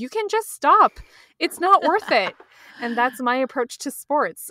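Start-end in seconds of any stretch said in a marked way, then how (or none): 0.0-2.3 play-acted loud, high-pitched yelling. Retelling watching struggling runners from your couch, retelling yelling at the tv. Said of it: "I'm like yelling at the TV".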